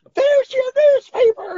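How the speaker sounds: super-high, shrill, very loud scream. Speaker retells a man hitting someone with a newspaper, retelling a super-high scream. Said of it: "in this super high voice".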